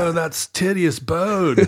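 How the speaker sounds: put-on surfer-dude voice, exclaimed. Speaker repeats a science term as a surfer exclamation, in a surfer-dude voice. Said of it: "that is the greatest surfer exclamation".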